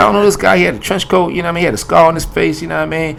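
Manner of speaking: high, loud, clueless, excited voice.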